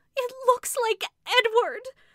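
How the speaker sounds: terrified, frenzied burst, very high and very loud. Rebecca bursts out to Mrs. Brigham and Carolyn in a frenzy of fear. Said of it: "burst out Rebecca in a sort of frenzy of fear".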